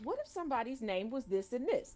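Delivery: ordinary delivery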